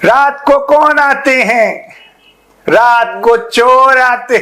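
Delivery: very high, squeaky, very slow drawn-out put-on voice. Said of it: "ये है बिलावल भुट्टो।".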